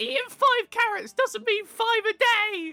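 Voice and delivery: put-on scolding mother voice. Imitating a centaur child's mother scolding him about eating carrots: imitating Pierre's mum nagging. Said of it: "I can see Pierre's mum going".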